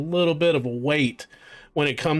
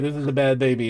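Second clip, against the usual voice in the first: ordinary delivery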